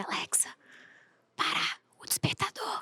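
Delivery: quiet, slow, soft whisper. Retelling how she woke up without waking her dogs: imitating her own whisper. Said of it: "se você sussurrar com a Alexa".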